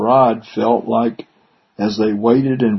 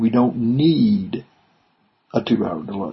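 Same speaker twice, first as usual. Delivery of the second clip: light stress on the word need; 3 dB quieter than usual. Recalling the words of a voice that protested, slight stress on 'need'. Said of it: "there was a very slight emphasis on the word need".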